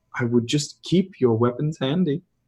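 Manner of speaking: close, hushed, secretive half-whisper. Voicing a dancer who leans close to a player's ear: half-whispering. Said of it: "she just whispers in your ear".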